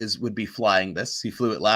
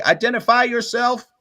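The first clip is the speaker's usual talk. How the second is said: thin voice over crackly comms, higher and louder; 13 semitones higher, 6 dB louder than usual. Voicing someone over a crackly comms system: reedy voice over a bad Vox. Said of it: "it's very reedy, super bad Vox".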